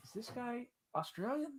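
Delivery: soft, hushed, puzzled voice under the breath. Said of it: "He was like".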